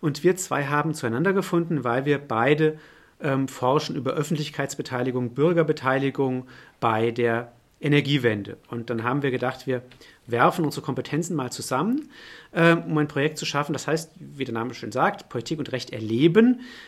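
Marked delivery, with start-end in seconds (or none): 15.3-16.6 erleben stressed with a rising tune. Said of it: "der Betonung auf diesem Erleben".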